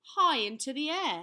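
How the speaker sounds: usual speaking voice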